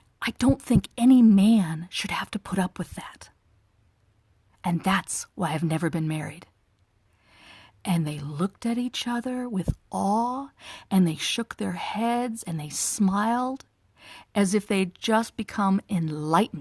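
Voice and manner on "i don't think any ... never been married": conspiratorial, confiding, secret-telling tone. Retelling sharing a secret with a gathered group, retelling own hushed voice. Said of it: "I got real hushed in my voice".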